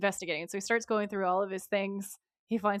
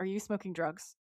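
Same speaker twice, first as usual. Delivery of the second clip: put-on dry, flat, expressionless deadpan delivery; 6 dB quieter than usual. Retelling a scene where a dad questions his son: imitating a deadpan question.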